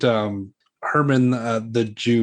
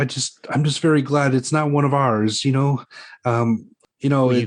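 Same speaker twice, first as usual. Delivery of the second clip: anxious, uneasy, nervous, hesitant, halting talk; 2 semitones higher than usual. Playing a questioned man answering an interrogator: nervous. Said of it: "he's seeming really nervous at this point".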